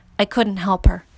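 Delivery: ordinary delivery, nothing marked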